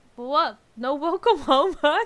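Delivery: very loud raspy voice. Narrator reading the husband's greeting to Connie, in a raspy voice. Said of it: "her husband began in a raspy voice".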